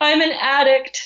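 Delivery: high voice bursting through tears. Pulled over by a young officer, the speaker retells what she said while bursting into tears. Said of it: "I burst into tears and I just say".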